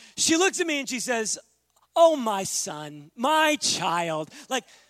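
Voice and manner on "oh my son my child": play-acted, very slow, drawn-out, ironic sweet tone. Retelling how she answered in an argument, imitating an ironic endearment. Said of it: "the tone doesn't connect with the endearment".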